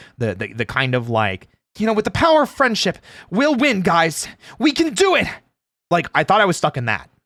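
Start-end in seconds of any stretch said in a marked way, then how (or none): 1.9-5.3 very high, generic anime protagonist voice. Describing the role type the speaker felt typecast in; generic anime protagonist voice. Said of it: "generic anime protagonist voice".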